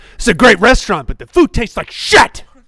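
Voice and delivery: very loud, high, shrill, furious yell. Speaker doing his impression of a man angry at a restaurant. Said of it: "his impression of a man that's angry at a, at a restaurant".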